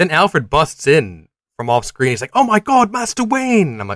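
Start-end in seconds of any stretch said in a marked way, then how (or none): 2.3-3.7 very high, thrilled, excited outburst. Retelling a film scene where Alfred bursts in: imitating excited Alfred. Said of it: "He's so excited".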